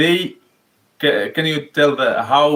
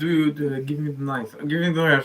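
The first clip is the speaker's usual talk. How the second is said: imitated whisper, quieter; 5 dB quieter than usual. Retelling telling his wife to hand over the knife: retelling a whisper. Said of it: "I whispered in your".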